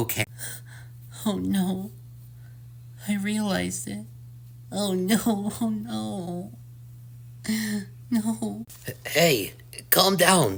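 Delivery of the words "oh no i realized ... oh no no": crying, higher, quieter, slower. Monami answers someone asking if they're okay, crying. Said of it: "Why are you crying?".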